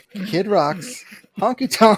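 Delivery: slow, cracking up, laughing through the words. Repeating the punchline words: laughing while talking. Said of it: "I can't".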